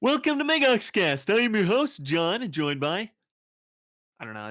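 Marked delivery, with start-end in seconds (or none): 0.0-3.1 very high, loud, belted cartoonish voice. Podcast host does his regular show intro in a voice he made up: Pluto character voice. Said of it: "I'll just do my regular intro as the voice".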